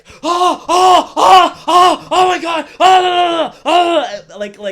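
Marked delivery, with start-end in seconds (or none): 0.2-4.4 very loud, high, drawn-out, scared yelps. Retelling how people reacted to every jump scare: imitating frightened moviegoers. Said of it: "That is exactly how they were".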